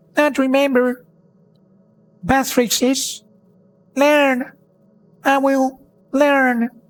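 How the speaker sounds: very high, faint, tiny goblin voice. A goblin answers from behind the iron door: tiny faint goblin voice. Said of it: "A tiny voice faintly behind the iron door".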